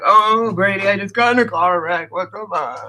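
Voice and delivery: panicked freaking-out voice. Retelling a friend's phone call after a car wreck: imitating Autumn freaking out. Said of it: "she called me freaking out".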